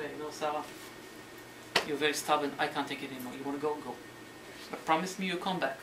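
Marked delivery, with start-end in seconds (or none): none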